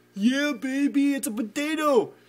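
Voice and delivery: bad, high, loud, shrill, drawn-out Canadian accent. Imitating what your friend up in Canada would say, in a bad attempt at a funny accent. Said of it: "would say with a funny accent".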